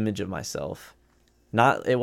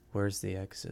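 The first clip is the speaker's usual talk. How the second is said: really quiet, hushed, barely audible; 2 semitones lower, 11 dB quieter than usual. Retelling what a guy asked during a jump scare: imitating a really quiet voice. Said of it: "just a really quiet".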